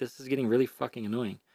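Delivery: ordinary delivery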